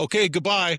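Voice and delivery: imitated shouting. Retelling what a father said from his deathbed: imitating a shout. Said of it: "he just shouted".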